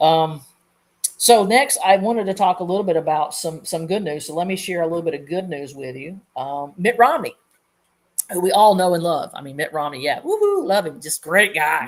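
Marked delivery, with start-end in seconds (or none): 6.8-11.9 sarcastic, swooping, gushing cheering. Sharing news about a politician with sarcasm: sarcastic. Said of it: "if you can't get the sarcasm in that".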